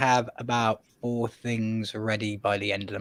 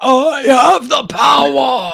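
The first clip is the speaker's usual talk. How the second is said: heroic battle cry, very high, very loud, booming; 14 semitones higher, 12 dB louder than usual. Joking that the other person will soon be He-Man, in a mock He-Man scream. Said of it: "He will be screaming".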